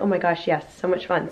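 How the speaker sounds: ordinary talk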